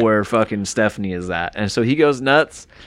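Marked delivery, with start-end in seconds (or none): none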